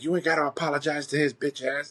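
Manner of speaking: acted-out angry yell. Retelling a woman's outburst at a kid apologizing, acting out angry yelling. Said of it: "she's just yelling and screaming".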